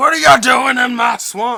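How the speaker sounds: shrieking yell, very high and loud. Joking with another speaker about a swamp, voicing Shrek yelling. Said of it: "Shrek yells".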